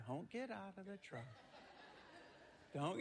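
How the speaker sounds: quick, rushed, very soft, hushed whisper. Telling of a devil and an angel on each shoulder, the angel whispering. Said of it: "the angel seems to whisper".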